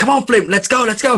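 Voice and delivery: high-pitched screaming. Playing a character screaming outside a door at flint: acted screaming. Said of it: "screaming outside the door".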